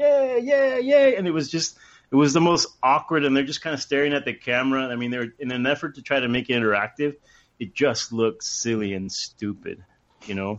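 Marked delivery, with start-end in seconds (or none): 0.0-1.2 acted, shrill, loud, very high old-timey cheering. Describing relatives cheering a goal for the camera, imitating old-timey cheering. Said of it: "cheering, kind of old-fashioned, old-timey".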